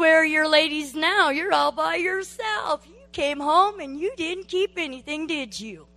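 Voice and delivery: loud, nagging, jeering voice. Retelling the nagging voice heard while bawling alone in the bathroom, imitating Satan's nagging voice. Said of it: "I call Satan his nagging voice".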